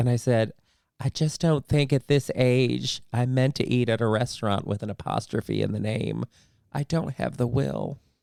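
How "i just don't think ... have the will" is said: theatrical, put-on TV actress voice. Retelling a reply given to friends on leaving: Parker Posey impression.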